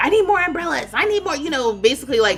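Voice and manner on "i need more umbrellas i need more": put-on very high, snippy, snappy voice. Retelling her snapping at her team for umbrellas: imitating someone snapping. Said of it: "she was kinda snapping at her team".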